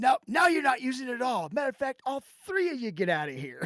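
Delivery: high, mean, snotty shop clerk voice. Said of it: "Real mean and snotty".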